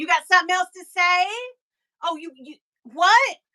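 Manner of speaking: acted-out high, confrontational tone, stumbling over words. Retelling a confrontation with a stranger: imitating her own confrontational challenge. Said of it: "I really did say".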